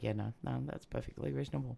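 soft aside, dripping with sarcasm.

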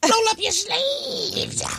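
squeaky, very high, loud put-on goblin voice. Repeating someone's warnings to the group, in a goblin voice. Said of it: "You sound like a goblin".

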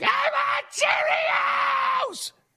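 put-on screaming toddler tantrum.

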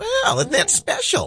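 very high-pitched, prim and proper voice. On Froggy 99.9, just after saying you sound like her, do a Church Lady voice. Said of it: "I sound like the church lady".

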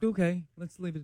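soft, hushed voice, like drifting off to sleep. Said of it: "That's not how you talk normally".

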